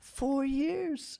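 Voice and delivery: shocked, stunned, soft and high-pitched. Retelling a woman's reaction to a friend; imitating a shocked reaction. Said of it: "it's more of like a shock".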